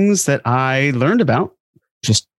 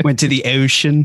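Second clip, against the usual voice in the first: slow Baltimore accent, ocean drawn out. Joking about a co-host's trip to Baltimore: Baltimore accent. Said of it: "that's a Baltimore accent".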